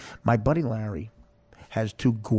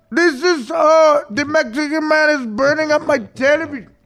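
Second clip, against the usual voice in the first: put-on Egyptian accent, very high, very loud, shrill, slow; 9 dB louder than usual. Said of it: "Do a good Egyptian voice".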